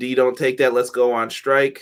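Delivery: ordinary delivery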